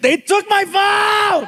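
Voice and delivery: shrill yell, pitched very high. Retelling how Frankie yelled at the ground when his phone was taken, imitating Frankie yelling. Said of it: "he yells at the ground and he goes".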